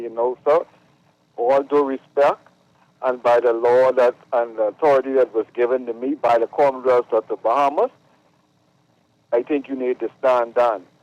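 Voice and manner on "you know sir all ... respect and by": usual speaking voice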